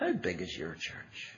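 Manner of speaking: acted-out, hushed, patronizing and condescending whisper. Retelling an arrogant minister questioning a friend: mock-condescending. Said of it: "said rather condescendingly".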